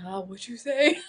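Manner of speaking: soft, put-on sultry, seductive, sexy voice. Mimicking someone who asks back what you said, in a mock sexy voice. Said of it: "in a sexy voice too".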